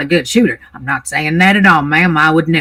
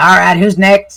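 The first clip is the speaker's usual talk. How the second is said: put-on elderly man character voice; 3 semitones higher, 3 dB louder than usual. Voicing an old man refusing hotel staff: old man character voice. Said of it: "you see an old man who's sitting there".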